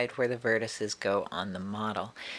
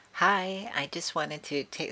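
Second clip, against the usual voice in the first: high, squeaky, cutesy put-on voice; 6 semitones higher than usual. Opening greeting, trying to sound cute: high squeaky cute voice. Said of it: "sorry about the squeaky voice, that was me trying to be cute".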